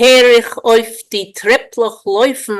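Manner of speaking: Polish-accented, measured reading. Reading a Yiddish poem line aloud before translating it: Polish accent. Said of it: "I'll try for the Polish accent".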